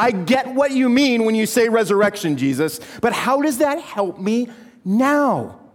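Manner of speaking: fed-up exasperated tone, "now" drawn out. Retelling Martha's reply to Jesus: imitating Martha's exasperation. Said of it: "you can hear the exasperation".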